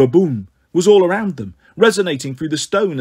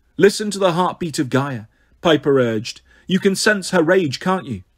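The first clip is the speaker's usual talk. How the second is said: ordinary delivery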